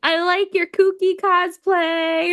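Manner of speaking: put-on friendly, high, drawn-out yell. Recalling calling out compliments to passing cosplayers, retelling yelling compliments. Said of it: "And I'm like yelling at them".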